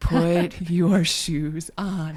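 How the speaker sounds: very slow, exasperated, strained patience. Parent shows how she talks to her kids when frustrated; frustrated, speaking really slowly. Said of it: "I'll like start speaking really slowly".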